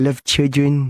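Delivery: odd put-on childlike voice, 'children' said strangely. Recalling a man's tv statement, speaker mimics him: imitating a weird childlike voice. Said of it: "He had a really weird way of saying children".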